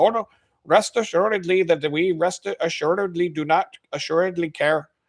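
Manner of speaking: put-on high-pitched Indian accent. Acting out a phone company worker from India answering a customer who quits: imitating a call center worker from India. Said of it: "the guy from India is like".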